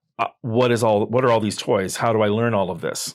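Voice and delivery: ordinary talk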